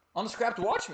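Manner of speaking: voice jumping up high. The speaker, recording himself, announces a title, voice going high. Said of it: "My voice went real high there".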